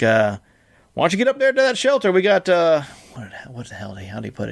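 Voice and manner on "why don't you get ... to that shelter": poor put-on Tennessee accent, much higher pitch. Retelling what a man said to the speaker, in a bad tennessee accent. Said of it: "it was a Tennessee accent".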